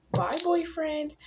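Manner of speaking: mock squealed yell, high and mild. Retelling a goodbye as he leaves for seventh period: imitating own scream. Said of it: "But I screamed".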